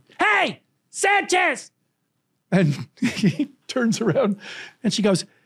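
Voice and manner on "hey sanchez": put-on little girl's yell, much higher. Retelling a young girl at a ballgame calling out to a player, imitating her yell. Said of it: "And she yells to this guy".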